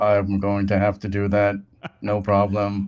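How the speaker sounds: low, level, toneless robot monotone. Showing a co-host how they must speak, in a monotone robot voice. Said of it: "you have to speak very monotone, kind of like you are a robot".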